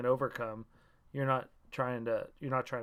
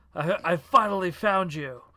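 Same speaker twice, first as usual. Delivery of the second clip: hammy, overacted delivery, higher and louder; 5 semitones higher, 9 dB louder than usual. Player voicing his character, who always overacts, confronting villains: overacting. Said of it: "He always had an overacting thing".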